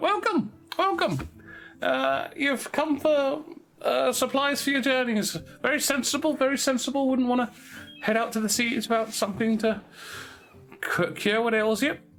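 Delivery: very high, squeaky little put-on voice. A voice from behind the counter greets you as you come inside: squeaky voice. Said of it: "just squeak out".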